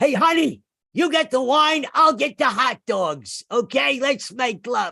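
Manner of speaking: very high-pitched, stretched-out, slow comic voice. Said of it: "he doesn't really talk like that".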